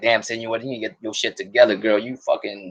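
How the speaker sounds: normal talking voice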